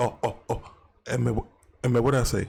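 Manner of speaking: flustered, catching himself. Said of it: "and then he was like".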